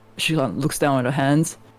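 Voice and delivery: ordinary talk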